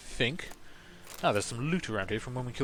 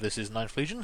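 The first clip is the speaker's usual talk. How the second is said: ordinary talk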